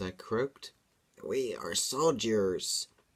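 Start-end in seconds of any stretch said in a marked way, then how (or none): 1.2-2.9 hissing, monstrous fiend-like creature voice. The stitched being answers the narrator's question, hissing. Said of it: "hissed the stitched being".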